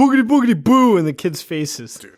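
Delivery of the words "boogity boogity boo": piercing, shrill, full-volume spooky shriek. Retelling a movie character screaming in the kids' faces: imitating a scream. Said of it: "and screams".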